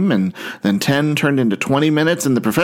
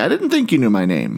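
plain

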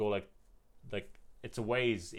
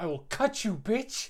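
mock menacing, very high and loud aggressive voice; 12 semitones higher, 5 dB louder than usual. Retelling a man's threat while he walked down the road, mock-aggressive threat. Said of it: "But then he got really aggressive".

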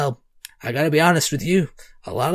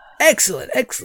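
high, eager, startled shopkeeper delight; 8 semitones higher than usual. Playing a shopkeeper answering a customer who wants a mug, enthusiastic and almost shocked. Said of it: "she seems very sort of enthusiastic and almost shocked".

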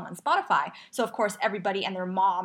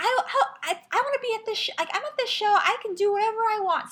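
very high-pitched, shouted, play-acted yell; 13 semitones higher than usual. Retelling a concert guy yelling back at his boyfriend: imitating someone yelling. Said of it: "yell back at his boyfriend and say".

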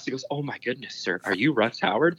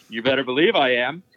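put-on proud, boastful tone. Retelling how Russ answered a fan, imitating a proud boast. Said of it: "his chest sticks out just like".

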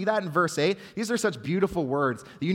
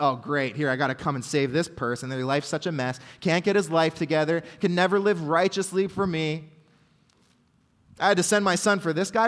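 ordinary talk, nothing marked

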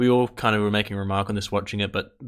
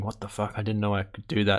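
mock panicked voice, quieter; 4 dB quieter than usual. Retelling a film scene where the character runs off: imitating a freaked-out character. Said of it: "runs off freaked out going".

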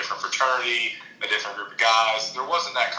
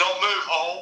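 put-on abrupt high yell; 8 semitones higher than usual. Retelling a buddy's shout at his golf shot: imitating a friend yelling. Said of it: "he just yelled".

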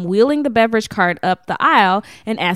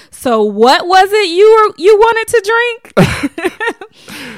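mock-suppressed laugh, higher pitch, slower; 9 semitones higher, 6 dB louder than usual. Retelling what she said to him, imitating someone stifling a laugh. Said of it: "trying not to laugh".

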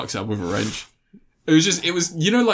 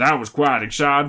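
put-on American-accented delivery. Retelling a film's ending after a plane lands: Chloe Grace Moretz impression with American accent. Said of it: "she has an American accent at the point".

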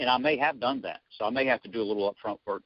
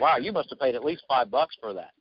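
sarcastic, mocking tone. Showing how to tease a client about what they did: sarcastic. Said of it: "you're really being sarcastic".

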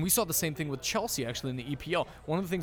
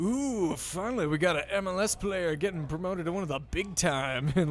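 snide, sarcastic, gushing put-on excitement; 3 semitones higher than usual. Speaker mimicking reactions to an mls player's move to england, with mock sarcastic excitement. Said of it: "I also love the sort of sarcastic excitement".

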